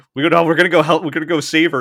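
fired-up, rousing shout, high-pitched and loud.

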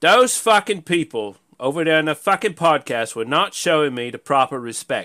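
bad put-on English accent. Quoting a man still sore about the podcast, the speaker does a bad put-on accent. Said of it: "I don't do the accent so well".

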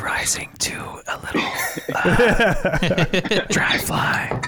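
breathy, whispered ASMR-style voice. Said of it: "let me whisper that".

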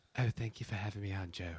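put-on light British accent. Retelling a podcast guest thanking the host: imitating John Danaher's British accent. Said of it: "So he has this kind of British accent".

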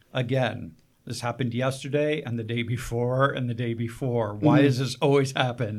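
normal talking voice

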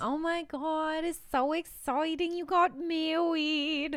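high-pitched mob wife accent, cartoon-style. Speaker congratulating a newlywed, in a half Mob Wife, half Elmer Fudd accent. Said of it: "That accent was half Mob Wife and half Elmer Fudd".

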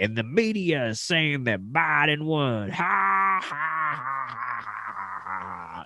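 mock creepy laughter. On a podcast, act out how he was laughing in church, imitating someone's creepy laughing. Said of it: "he was laughing in church very creepily".

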